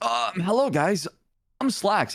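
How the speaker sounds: put-on high-pitched, slow, young-kid character voice. Showing the others the old Slacks voice: old Slacks character voice. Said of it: "I used to sound like this".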